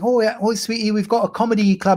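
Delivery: put-on sweetly chatty English accent. Retelling what a woman from England said about a comedy club, English accent. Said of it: "she had an English accent".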